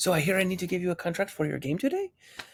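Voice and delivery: put-on French accent. Retell how the owner of Lucky Duck walked up to your table, imitating a French accent. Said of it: "in his wonderful French accent".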